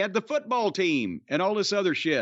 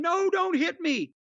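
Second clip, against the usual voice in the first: mock desperate begging, high and drawn-out; 11 semitones higher than usual. Retelling a wrestling angle where he pleads not to be hit: imitating himself begging. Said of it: "And then I'm begging".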